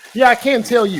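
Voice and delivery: ordinary talk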